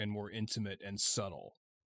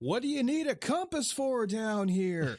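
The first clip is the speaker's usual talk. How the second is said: very high, loud, top-of-the-lungs yell; 13 semitones higher, 7 dB louder than usual. Retelling how a character blurted out a question while hiding: imitating Ben yelling at the top of his lungs. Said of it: "at the top of his lungs".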